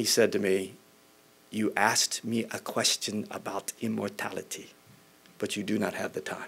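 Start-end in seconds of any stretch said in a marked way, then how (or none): 1.5-6.5 put-on gentle German-accented speech. Retelling a man's answer to the speaker's request for a short summary, in a German accent. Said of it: "in his wonderful German accent".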